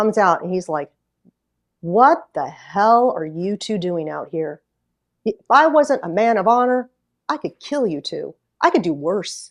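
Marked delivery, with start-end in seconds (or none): 1.8-9.5 put-on big, gruff old trucker voice. Retelling a trucker who stopped after a blown tire: imitating a gruff old trucker. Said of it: "Big gruff old guy".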